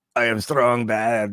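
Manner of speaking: very slow, drawn-out cartoon bully voice, every word dragged. Describing a cartoon bully character, then doing his voice: Strong Bad voice. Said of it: "He talks like this".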